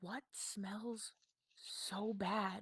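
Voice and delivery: quiet, hushed whisper. A figure whispers to one of the taller figures: whispering. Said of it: "and they kind of whisper".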